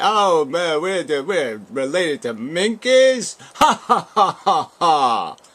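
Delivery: slow, scornful, derisive jeer ending in ha-has. Acting out a game show contestant laughing at evolution: imitating mocking laughter. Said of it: "Let's mockingly laugh at it".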